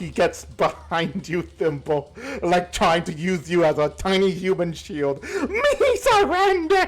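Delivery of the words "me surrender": bawling goblin voice, very high and tearful. As the game's narrator, voicing a goblin hiding behind a player character: sobbing goblin voice. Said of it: "he's just bawling in tears".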